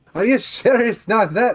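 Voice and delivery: very loud, high, shrill Scottish dwarf accent. Showing how Cantrell's line sounded: dwarven Scottish accent slipping out. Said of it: "the dwarven is coming out".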